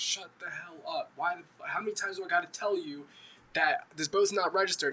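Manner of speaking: put-on fed-up old man voice, angry ranting tone. Retelling a grandfather scolding a friend in the boat: imitating an angry grandfather. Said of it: "his grandfather was mad".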